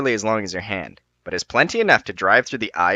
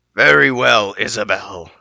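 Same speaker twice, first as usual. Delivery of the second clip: growling dragon voice; 4 dB louder than usual. Reading the story, voicing the dragon addressing the listener's character, growling dragon voice. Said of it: "the dragon growls".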